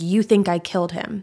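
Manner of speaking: put-on muttering under breath. Retelling a suspect's words to detectives, imitating muttering under breath. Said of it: "he just says under his breath".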